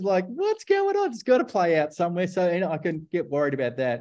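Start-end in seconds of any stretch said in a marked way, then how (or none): 2.3-4.0 chuckle running through the words, laughing while talking. Answering an interviewer's questions, speaking with a laugh in his voice. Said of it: "He says with a laugh in his voice".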